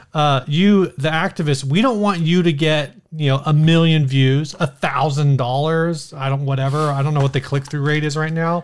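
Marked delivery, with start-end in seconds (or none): none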